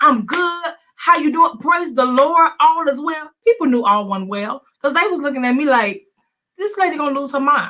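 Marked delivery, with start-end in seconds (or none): 0.0-3.3 forced, fake, put-on cheerful tone. Recalling how she acted at church while not okay, imitating fake church cheerfulness. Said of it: "you put the church face on".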